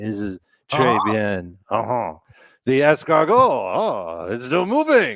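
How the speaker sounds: loud, swooping put-on French accent, oh drawn out. Talking fantasy football, a speaker suddenly slips into a put-on french accent. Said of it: "Why am I speaking in a French tone?".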